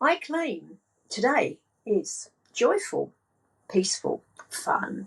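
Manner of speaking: slow, measured, deliberate, each word spoken separately. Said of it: "what you do then is you claim".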